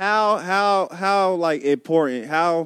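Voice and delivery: very slow, halting, stuck stammering. Trying to ask another speaker a question: stumbling over words. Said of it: "I can't fucking get the question out".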